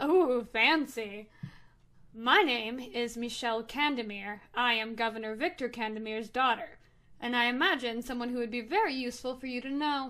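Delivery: amused, chuckling and snickering. Narrator voices the governor's daughter introducing herself to an envoy, snickering. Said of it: "she just kind of snickers and goes".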